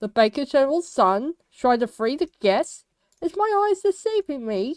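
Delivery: put-on mocking, scornful, derisive jeering tone. Retelling a story, speaker quotes the Colonel addressing the Baker General's son, retelling a mocking tone. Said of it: "he says in a mo- mocking tone".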